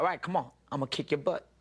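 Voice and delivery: put-on Southern accent. Retelling what an actor on a movie set said: imitating a southern accent. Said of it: "he has a southern accent".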